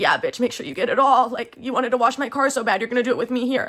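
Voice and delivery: mocking, jeering voice through laughter. Retelling what he said while laughing at the speaker: imitating someone laughing mockingly. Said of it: "he's sitting there laughing at me".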